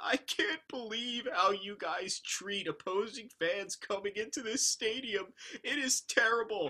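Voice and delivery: put-on high, tearful, sobbing, crying voice. Retelling leaving a stadium, quoting an opposing fan, imitating a fan crying. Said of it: "he was literally crying, saying".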